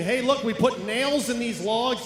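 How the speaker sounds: ordinary talk, nothing marked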